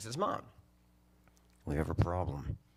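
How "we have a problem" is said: put-on whisper, lower. Retelling Mom's phone call about a problem, imitating someone whispering. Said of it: "Why are you whispering?".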